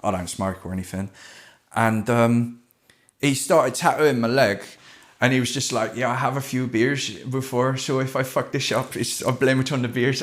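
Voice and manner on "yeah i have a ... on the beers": convincing put-on Dutch accent. Quoting the man who was tattooing the speaker's leg, in a dutch accent. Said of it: "That's a really good Dutch accent".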